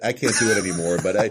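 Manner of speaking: ordinary delivery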